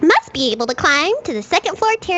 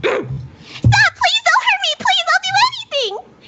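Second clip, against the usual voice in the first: put-on pleading cry, very high, yelled. Redoing a fumbled line after asking for it: fake pleading yell. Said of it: "And if I yell".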